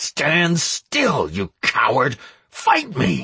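dreadful growl with swooping pitch. Narrator reading a story, challenging a vampire to fight, growling in a terrible voice. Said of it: "I growled in a terrible voice".

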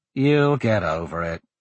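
plain reading voice

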